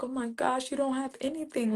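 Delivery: put-on, very quiet, hushed and near tears. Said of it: "I started crying".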